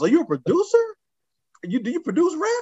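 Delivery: mock very high, animated, swooping shouted yell. Retelling what another guy yelled at him: imitating someone yelling. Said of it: "Another guy yells".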